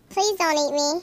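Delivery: tiny, squeaky, high little character voice. A pea on the narrator's dinner plate pleads with the narrator, squeaky talking-pea voice. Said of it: "It said with a squeaky voice".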